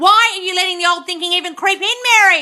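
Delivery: very loud, high-pitched, annoyed yelling. Scolding a viewer named Mary for letting old thinking return: yelling at viewers. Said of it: "I'm yelling at a lot of you here".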